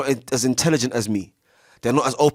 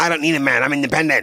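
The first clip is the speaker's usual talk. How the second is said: put-on mocking voice; 3 semitones higher than usual. Showing the listener how they sound to others, in a mocking imitation. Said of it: "That's how you sound".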